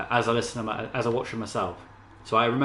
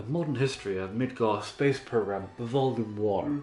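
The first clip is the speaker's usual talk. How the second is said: prim, bookish, stuffy librarian reading voice. Reading a list of book titles aloud: stuffy librarian voice. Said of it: "I'm using my librarian, stuffy librarian voice".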